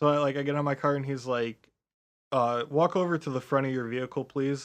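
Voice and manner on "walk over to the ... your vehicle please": ordinary talk, nothing marked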